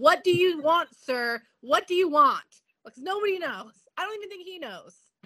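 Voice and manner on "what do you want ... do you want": loud, baffled screaming. Retelling how they reacted to the show: imitating screaming at the TV. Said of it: "screaming at the T V".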